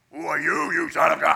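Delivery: very loud, rasping demon voice. Speaker retelling a possessed man's words, doing a demon voice. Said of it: "he throws the demon voice on him".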